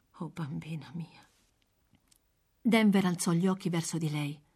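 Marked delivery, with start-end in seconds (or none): 0.1-1.2 hushed, very gentle, soft, tender murmur. A woman answers a girl begging food for her sick mother, soft and gentle. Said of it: "detta a bassa voce e con tale gentilezza".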